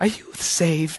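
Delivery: sweet, hushed, breathy whispered lady voice. Retelling a religious question put to them, put-on church lady voice. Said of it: "I don't know why I do that voice".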